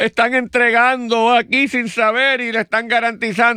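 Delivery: put-on, high-pitched outcry.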